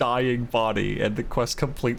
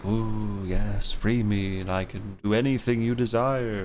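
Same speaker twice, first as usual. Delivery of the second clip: eerie, mysterious, ominous voice; 3 semitones lower than usual. Recapping a game, the speaker acts out a mystery voice: put-on ominous mystery voice. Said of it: "ominous mystery voice telling him".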